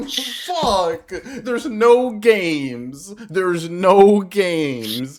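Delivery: put-on griping moan, very loud and very slow. Retelling how the other speaker reacts to announcements: imitating someone complaining. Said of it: "you're gonna be like".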